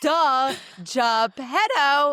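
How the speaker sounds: put-on know-it-all screaming. Retelling how the performer stood up to answer, imitating a know-it-all screaming.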